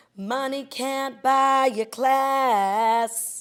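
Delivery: loud, slow, put-on grand-dame drawl. Reading out a line just found, sounding like the Countess. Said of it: "You sound like the Countess with your voice".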